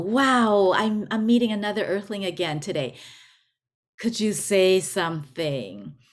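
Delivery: play-acted, thrilled, excited alien voice. Telling a joke, voicing the extraterrestrial meeting another earthling: excited alien. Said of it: "the E T is so excited and go".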